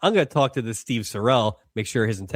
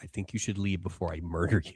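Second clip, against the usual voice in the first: quiet, low, soft, ominous and held-back menace; 4 semitones lower, 10 dB quieter than usual. Acting out how the character should have warned Frank: quiet but ominous. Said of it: "quiet but ominous".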